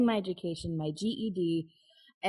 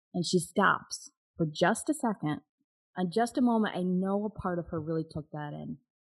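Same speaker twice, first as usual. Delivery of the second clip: plain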